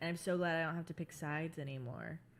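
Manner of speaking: ordinary talk, nothing marked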